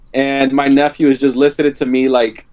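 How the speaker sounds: ordinary delivery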